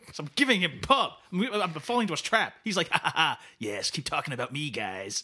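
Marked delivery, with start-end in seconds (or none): 2.9-5.2 low, dropped, chuckling, laughing put-on voice. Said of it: "That's a dynamite [name] impression".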